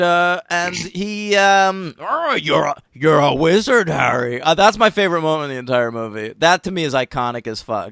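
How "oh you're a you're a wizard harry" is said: big, grumbly giant voice, words grumbled out. Retelling the movie's scene where the giant arrives: grumbly Hagrid voice. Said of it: "he talks like grum-, grumbly".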